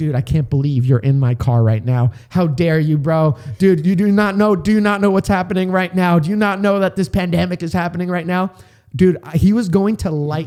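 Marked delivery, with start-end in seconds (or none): 0.0-8.5 mock-angry man's voice, ranting furiously. Recounting a masked man angry at the speaker for being in his car, imitating an angry man. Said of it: "he's effing pissed off at me".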